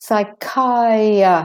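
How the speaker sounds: slow, drawn-out psychiatrist with a weak second i. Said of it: "The A is de-stressed".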